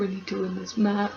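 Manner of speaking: put-on flat, depressive voice. Contrasting with the excited take: imitating Dolph's flat voice. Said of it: "he's very".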